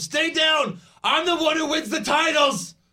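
furious, high, loud yell. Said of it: "Owens then yells at him".

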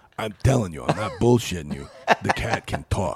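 put-on earnest, insistent, very stoned-sounding voice. Retelling what a friend said while high: imitating a friend named Jay. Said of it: "He talks like this".

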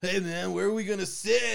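put-on all-out rowdy shout, loud and rough. Retelling two kids coming into the movies with his dad, imitating kids shouting loudly. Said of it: "as loud as I can".

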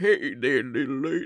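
low-pitched bad put-on voice. Retelling how a voice actor plays a line: Bill Clinton impression.

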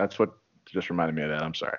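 ordinary delivery

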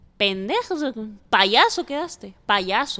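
ordinary talk

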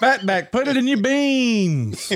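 very high hollering, "beans" stretched long. Repeating how the other speaker yelled a family holiday saying, retelling a yell. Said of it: "first time I got to yell it".

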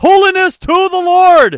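ear-splitting full-volume, very high, drawn-out yell. Reading a phrase written all in caps, shouted very loudly. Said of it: "I didn't mean to blow everybody's ears out. It's all in caps!".

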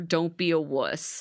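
ordinary delivery

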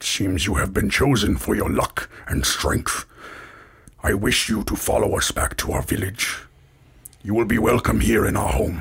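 gruff, rough-spoken, common-sounding voice. The leader steps forward and addresses the outsiders, in a gruff voice. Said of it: "as he speaks in a gruff common".

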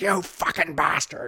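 high-pitched, mild, contained yell. Retelling a favorite movie scene of an actor screaming profanity: imitating Donald Pleasence screaming. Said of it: "in a Donald accent, like, Donald Pleasance, like, voice".

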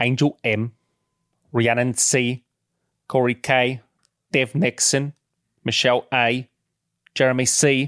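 put-on British actor voice. Reading out names in an impression: Michael Caine voice. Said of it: "Yours is better, Michael Caine".

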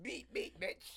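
breathy, airy, teasing put-on voice. Imitating a friend driving a hovercraft: imitating a friend's voice. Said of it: "I'm not talking like that".

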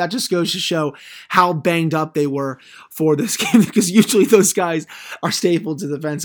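words broken up by laughter while talking. Hockey commentator recapping the Penguins' fourth line on the 6-on-5, laughing while speaking. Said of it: "I'm sorry I'm laughing about it".

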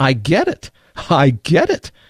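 mock very slow, drawn-out, swooping, thrilled exclamation. Telling a story, voicing a woman's sudden realization, imitating an excited voice. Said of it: "she said in an excited voice".

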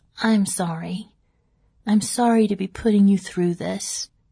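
put-on tender, gentle voice. Speaker quotes the ill woman they were caring for, imitating a tender voice. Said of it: "tenderly said".

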